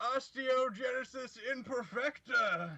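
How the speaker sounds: shrill, very high-pitched shouted yell. In a tabletop game, the speaker's character yells out a curse spell. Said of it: "Barian yells out".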